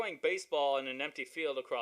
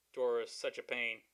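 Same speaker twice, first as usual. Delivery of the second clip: plain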